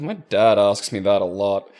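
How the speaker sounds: put-on slow, sighing, weary voice. Retelling a year 7 pupil's answer about sarcasm: imitating a sighing reply. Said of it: "she just sort of sighs and goes".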